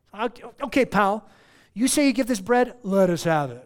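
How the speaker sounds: booming, very loud, mocking, sarcastic tone. Retelling the crowd challenging Jesus about the bread: imitating sarcasm. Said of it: "It was like sarcasm".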